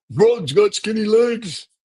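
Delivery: very high-pitched, loud, heckling jeer. Closing a segment with a quick heckle, Statler or Waldorf impression. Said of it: "Statler or Waldorf impression for you".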